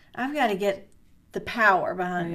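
normal talking voice

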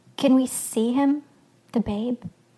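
plain

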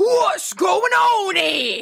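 put-on overdone Cockney accent, high and very slow. Retelling an actor bursting in trying to sound intimidating: dramatic Cockney accent. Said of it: "It was so dramatically, like, Cockney".

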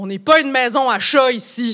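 full on-air announcer delivery. Recalling the father on the phone, the speaker quotes him in his big Radio-Canada announcer voice. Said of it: "dans sa grosse voix d'annonceur radio de Radio-Can".

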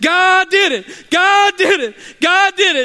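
put-on shrill, very high, loud shouting. Retelling a story of a woman answering her neighbour: imitating a woman yelling. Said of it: "She's yelling".

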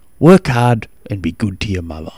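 normal talking voice

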